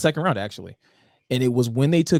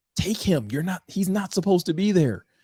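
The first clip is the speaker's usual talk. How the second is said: mock screaming, much higher pitch; 6 semitones higher than usual. Speaker recounts what they yelled at their tv, retelling screaming at the tv. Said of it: "was screaming at my TV like".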